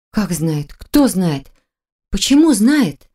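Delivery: flustered, anxious, mumbled. Marina questioning Viktor, agitated muttering. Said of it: "взволнованно пробормотала Марина".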